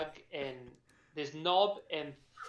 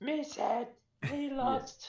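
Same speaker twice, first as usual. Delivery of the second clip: put-on uncertain kobold voice, higher pitched; 11 semitones higher than usual. Showing the others the voice used for Colin: uncertain kobold voice.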